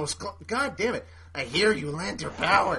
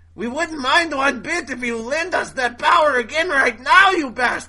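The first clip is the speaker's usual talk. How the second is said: loud, high, crazy, creepy, put-on German accent; 6 semitones higher, 6 dB louder than usual. Reading a manga character's line in a recap, in a crazy, creepy German accent. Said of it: "I think I should just do it in that crazy, creepy German accent".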